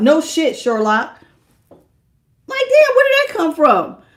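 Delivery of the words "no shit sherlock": put-on sarcastic tone. Acting out a harsh reply to a helpful remark: imitating a sarcastic retort. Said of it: "a Queen of Swords can be kinda sarcastic".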